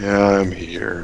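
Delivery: low, flat, half-hearted, totally unenthusiastic voice. Introduced by the host for the show's season finale, answer unenthusiastic. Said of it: "Doesn't sound too enthusiastic about that".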